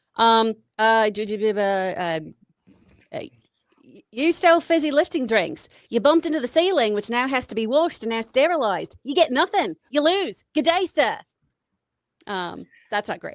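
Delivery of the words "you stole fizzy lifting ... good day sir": put-on furious Australian accent, pitched up. Asked to do an angry aussie, the speaker attempts it: angry australian accent. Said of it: "You do an angry Aussie".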